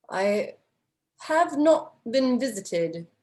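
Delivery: bad, fake, almost-British accent. Narrating a character who stands to greet the party, bad British-esque accent. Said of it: "that's a bad accent".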